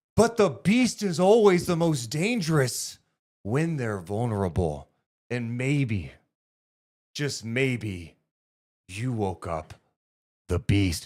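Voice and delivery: earnest, heartfelt, emotional wrestling promo style. Performing a wrestling promo as asked: emotional Cody Rhodes promo. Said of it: "Let me be, like, emotional Cody Rhodes".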